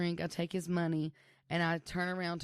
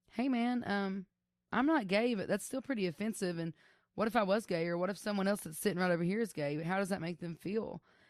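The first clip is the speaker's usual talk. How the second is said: usual speaking voice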